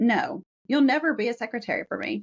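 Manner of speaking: mock rudest possible no, rude and dismissive. Retelling the agent's refusal to hire as a secretary: imitating a rude voice. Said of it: "in the rudest voice I'll never forget".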